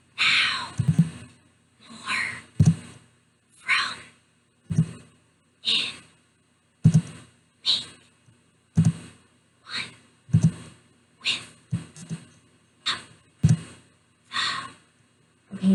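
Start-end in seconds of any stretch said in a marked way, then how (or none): 0.2-13.6 slow whisper, one word at a time. Leading listeners through a word list, one word at a time: whispering. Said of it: "let's whisper these ones".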